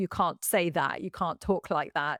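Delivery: ordinary talk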